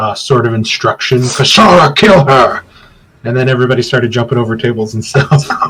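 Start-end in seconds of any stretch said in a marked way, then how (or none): 1.2-2.6 furious, loud, through gritted teeth, jaw clenched. In a roleplaying scene, one character orders another to kill someone, angry through gritted teeth. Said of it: "kind of in a gritted teeth, like kind of angered loud".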